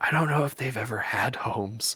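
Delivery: secretive, confiding stage whisper aside. In a game, the narrator voices a mentor who comes out and speaks to the player, half-whispering. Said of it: "kind of whispers to you and he goes".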